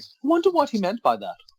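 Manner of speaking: goofy, very high, silly put-on voice. Speaker acting out lying awake at three in the morning, silly put-on voice. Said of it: "why have you got a voice?".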